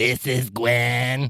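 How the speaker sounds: rasping voice, one word stretched out. Recalling the mattress company account rep answering calls, imitating Gwen's raspy voice. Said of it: "her voice was just so raspy".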